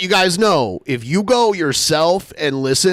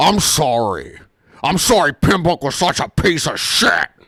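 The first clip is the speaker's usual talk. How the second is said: insincere, backhanded, trash-talk tone. Mocking how the creator made his first apology: imitating the video's creator apologizing. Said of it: "where he's like".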